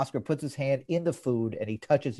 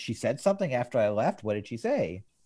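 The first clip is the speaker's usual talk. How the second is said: plain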